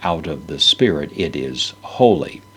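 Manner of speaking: stress on holy.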